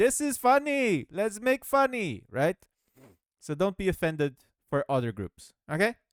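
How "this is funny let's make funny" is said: high, loud, slow mock Indian accent. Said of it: "Indian people who are like".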